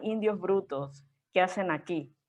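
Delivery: ordinary talk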